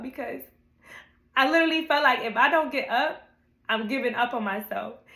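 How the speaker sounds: weepy, tearful voice, crying with happiness. Speaker talking to viewers about getting up for class, crying happy tears. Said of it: "I'm crying because I'm happy".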